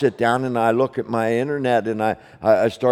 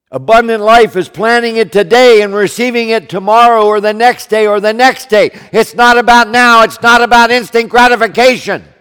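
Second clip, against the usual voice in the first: very high, very loud, all-out shouting; 11 semitones higher, 10 dB louder than usual. Speaking to an audience they call their kids, yelling. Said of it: "I'm yelling".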